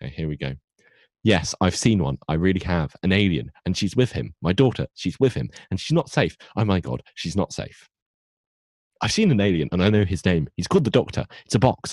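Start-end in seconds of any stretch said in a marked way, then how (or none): 1.2-11.9 rushed, swooping delivery straight through without pauses. Doing an impression of a woman answering the phone, rushed, no pauses. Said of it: "my impression of her answering the phone".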